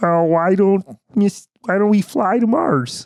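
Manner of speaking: high-pitched frog puppet voice. Showing how the speaker's Kermit would say the line: Kermit voice. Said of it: "Kermit would be like".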